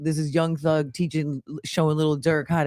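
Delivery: ordinary delivery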